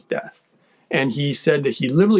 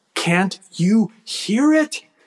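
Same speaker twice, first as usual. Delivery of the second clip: mock very intense voice, slow and pitched-up; 7 semitones higher than usual. Recalling speaking to the brother who couldn't hear the sound, retelling a very intense voice. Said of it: "I spoke with a very intense voice".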